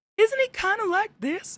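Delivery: tiny cartoon voice rising into a very high squeak. Trying to show how a cartoon cookie sounds: attempted Gingy voice like Mickey. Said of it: "doesn't Gingy kinda sound like Mickey?".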